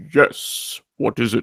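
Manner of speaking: hushed, breathy, soft villain voice. On the podcast, answering someone who greets the speaker as Destro, Darth Vader-style Destro voice. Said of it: "like Darth Vader slash Destro animated voice".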